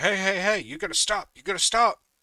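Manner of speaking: mock guard voice, high, sudden and urgent. Retelling how a security guard stopped him: imitating a guard screaming. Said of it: "he starts screaming".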